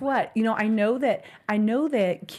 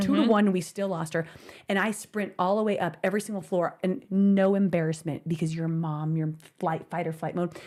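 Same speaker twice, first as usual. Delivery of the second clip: plain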